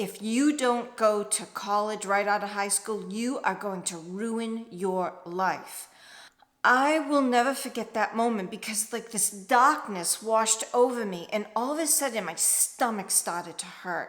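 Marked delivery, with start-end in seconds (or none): 0.0-5.9 put-on stern voice. Retelling what a nun said in reply: imitating a stern nun. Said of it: "looked at me very sternly and said".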